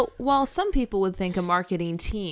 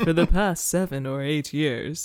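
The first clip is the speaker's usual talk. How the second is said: going lower, deeper-pitched voice; 2 semitones lower than usual. Told by the other speaker to go lower, trying the line again, going lower. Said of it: "You have to go lower".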